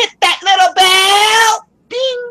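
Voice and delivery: very high, loud, belted, with bell dragged out. Imitating a YouTuber telling viewers to hit the bell: loud Mister Craner impression. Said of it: "I cannot do Craner's voice quietly".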